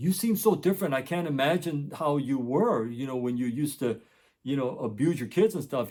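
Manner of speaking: ordinary talk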